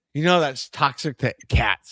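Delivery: acted-out cross, disapproving, angry scolding tone. Retelling a remark from someone who got mad: imitating someone getting mad. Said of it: "Someone got mad at me".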